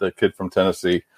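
plain

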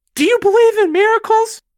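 very loud, very high announcer-style scream. Podcast host retelling the famous commentary line from their intro, Al Michaels scream. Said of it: "looks at the scoreboard and screams".

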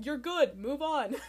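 slow, omniscient offstage announcer voice from above. Imitating a show host's voice in the background: Jeff's omniscient background voice. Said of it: "you get Jeff's voice, like, omnisciently".

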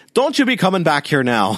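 weird, high-pitched, put-on Irish accent. Speaker quotes a board game's jail voice clip in a weirdly irish cop voice. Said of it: "sounds like a weirdly Irish cop saying".

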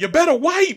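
very high, very loud shriek. Retelling how she screamed at the toilet after it flushed: retelling a scream. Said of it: "like screams like she's talking to it".

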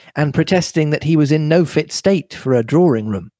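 plain

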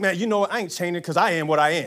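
dismissive tone, full of attitude. Quoting what some people say: imitating someone saying it with attitude. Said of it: "some people can say that with an attitude".

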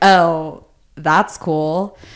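play-acted utterly unbothered, flat, dismissive tone. Retelling a friend's reply on the phone, imitating an unaffected, annoyed reply. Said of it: "literally so unaffected".

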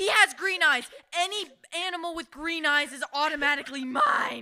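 put-on loud, sassy voice of a young schoolchild. Retelling what a fourth grader said at camp: imitating a sassy fourth grader. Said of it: "being a sassy fourth grader".

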